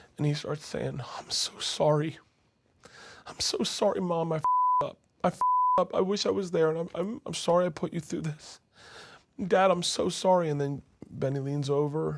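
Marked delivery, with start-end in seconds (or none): 1.2-10.5 mock sobbing, high and tearful, pleading tone. Retelling a son's tearful apology to his mom, imitating Croy crying. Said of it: "And he's crying".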